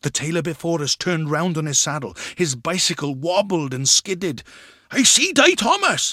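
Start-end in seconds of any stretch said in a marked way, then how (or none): 4.9-6.1 very high, raised, drawn-out cry. Narrator reads the tailor turning round on his bicycle, crying out. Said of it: "he cried".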